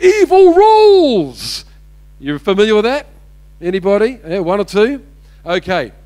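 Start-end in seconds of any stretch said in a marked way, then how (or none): 0.0-1.7 high, loud, slow, gloating villain yell. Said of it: "yells out that famous line".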